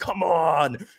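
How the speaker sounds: over-the-top celebratory victory yell. Recounting over-celebrating after knocking the grubs down; retelling a yell. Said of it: "I'm yelling".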